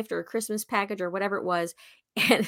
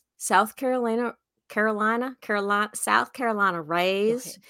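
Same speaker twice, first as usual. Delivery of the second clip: put-on, fake Southern accent. Introducing a guest from South Carolina in a put-on Southern accent. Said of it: "How was that accent, huh?".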